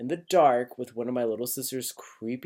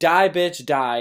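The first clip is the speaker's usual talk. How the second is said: loud, high scream through tears; 5 semitones higher, 8 dB louder than usual. Recalling freaking out and throwing the phone at a doll: retelling a tearful scream. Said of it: "I was screaming".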